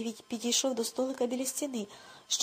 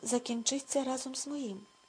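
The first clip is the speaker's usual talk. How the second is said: usual speaking voice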